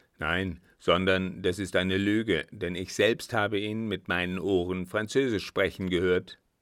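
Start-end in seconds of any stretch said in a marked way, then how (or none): none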